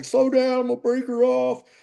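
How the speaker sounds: mock high, shouted yell. Retelling how the first mate calls out to the boat driver: imitating someone yelling. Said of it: "He's yelling at the guy driving".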